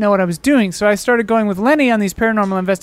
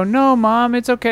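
ordinary talk

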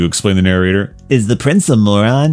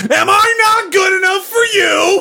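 shrill, very high-pitched yell. Reading a story aloud, the narrator voices a character's line, yelling. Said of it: "Yelled the voice again".

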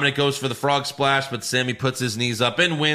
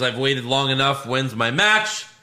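plain

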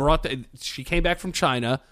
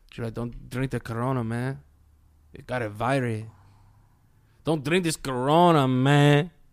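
put-on Mexican accent. The speaker imitates the guys who hang out at his deli: Mexican accent. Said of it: "I heard you doing like a Mexican accent".

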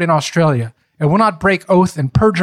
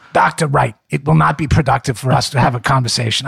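put-on Brooklyn-accented speech; 3 semitones lower than usual. Reading out a lawyer's deposition question: brooklyn accent. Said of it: "I do a pretty good Brooklyn accent".

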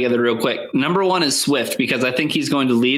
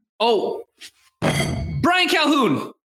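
put-on yelling voice, higher-pitched; 12 semitones higher than usual. Yelling a player's name in the background: yelling Matt Millen impression. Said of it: "are you doing your Matt Millen impression right now? Just yelling it in the background?".

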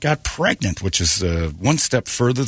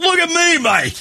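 very high, put-on Australian accent. Retelling how a diving companion in Australia pointed at you, imitating an Australian accent. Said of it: "You can almost hear his accent".

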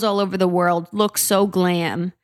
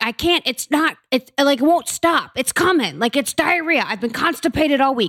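raised, high-pitched yelling; 6 semitones higher than usual. Imitating a woman heard in the early morning, retelling someone yelling.

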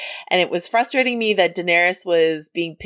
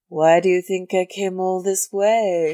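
slow, creepy, dramatic delivery. Doing a dramatic line reading of a favorite Game of Thrones character: King Bran impression. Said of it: "do an impression of like my favorite character".

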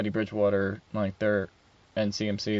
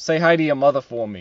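put-on Boston accent; 4 semitones higher, 6 dB louder than usual. Showing that Boston and Philadelphia sound different side by side, in a Mark Wahlberg Boston accent. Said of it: "Boston is like".

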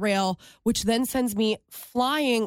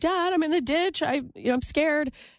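put-on tearful crying voice, higher; 5 semitones higher than usual. Retelling a phone call to her dad from a ditch: imitating her own crying. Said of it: "I'm crying".

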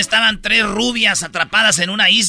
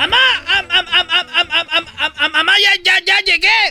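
imitated, mock stuttering, pitched higher; 10 semitones higher than usual. Retelling a joke, voicing a boy greeting his mother: imitating a stutter. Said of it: "Quería que todos fueran tartamudos".

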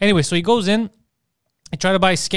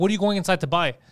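ordinary delivery

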